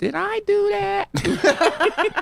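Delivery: very high, slow, squeaky, creaky nerd voice. Quoting a catchphrase after saying the voice sounds like Steve Urkel: Steve Urkel voice. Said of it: "My voice reminds me of Steve Urkel".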